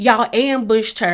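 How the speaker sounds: ordinary delivery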